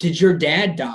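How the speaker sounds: loud stage whisper. Retelling how someone asked a question across the room, loud whisper. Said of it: "he loud whispers across the room".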